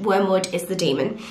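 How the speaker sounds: ordinary talk, nothing marked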